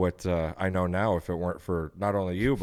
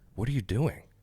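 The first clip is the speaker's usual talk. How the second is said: soft, close, quiet half-whisper; 2 semitones higher, 4 dB quieter than usual. Retelling how someone came over before the ceremony: imitating a half-whisper. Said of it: "whispers over my shoulder".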